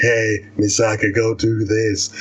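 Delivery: low, deep, whispery voice.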